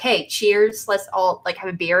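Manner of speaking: normal talking voice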